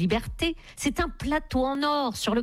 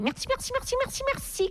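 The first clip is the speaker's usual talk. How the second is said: bird-like chirp, much higher. A narrator reads a woman saying thanks in many voices: chirping like a bird. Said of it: "Et puis elle pépiait".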